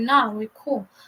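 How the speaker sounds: usual speaking voice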